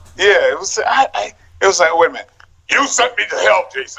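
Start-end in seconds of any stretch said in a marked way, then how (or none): 2.0-4.0 deep, serious, growly voice. Recalling how the role sounded with the teeth in: Spawn voice. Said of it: "It was like that kind of thing".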